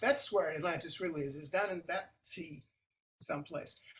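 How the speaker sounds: ordinary talk, nothing marked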